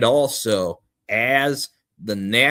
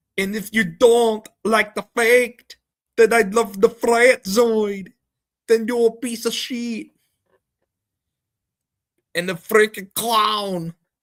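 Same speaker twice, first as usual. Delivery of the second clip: very high, slow, drawn-out mocking voice; 11 semitones higher than usual. Opening the night, the speaker does a mocking impression of someone he dislikes. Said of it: "that's my impression of that ass".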